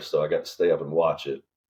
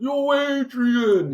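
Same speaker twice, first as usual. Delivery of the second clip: very high, hollered, carrying yell; 4 dB louder than usual. Retelling someone yelling off a balcony at a guy: imitating a Rocky yell. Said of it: "your dad just yelling off the balcony".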